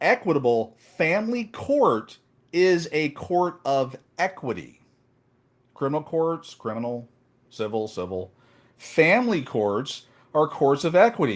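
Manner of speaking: very slow, deliberate, spelled-out word-by-word delivery. Explaining family court terms to the audience, saying it real slow. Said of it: "I'm going to say this real slow".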